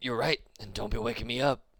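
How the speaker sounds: put-on gruff, rough-edged teenage girl voice. Retelling a just-woken teenage girl answering, in a gruff teenage girl voice. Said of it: "She has a very gruff voice for, for a teenage lady".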